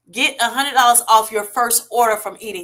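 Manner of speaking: ordinary talk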